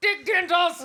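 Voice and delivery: very loud, high, announcing shout. Saying a name when asked to say it louder for the audience: saying it really loud. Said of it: "you gotta say it really loud for the audience".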